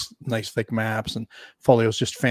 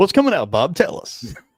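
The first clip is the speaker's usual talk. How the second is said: loud, pitched-up quiz show announcer delivery; 6 semitones higher, 6 dB louder than usual. Repeating a question to a guest, now like a game show host. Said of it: "that sounded like a game show".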